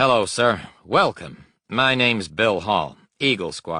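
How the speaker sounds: put-on cheerful, upbeat American accent. Reading a young pilot greeting a new patient: cheerful american accent. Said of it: "said cheerfully in an American accent".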